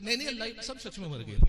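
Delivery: ordinary delivery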